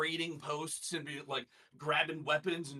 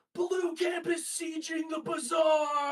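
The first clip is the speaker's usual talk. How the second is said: shrill, very high, loud scream; 13 semitones higher, 6 dB louder than usual. Retelling what the second in command screamed from behind: imitating Katla screaming. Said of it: "she's like screaming like".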